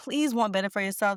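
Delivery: ordinary talk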